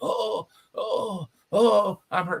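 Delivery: very slow, high, hurt moan. Retelling how the wrestler moaned while helped back: imitating Luther Lindsay moaning hurt. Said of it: "Luther the whole time".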